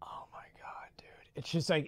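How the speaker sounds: soft, breathless, awestruck, overwhelmed whisper.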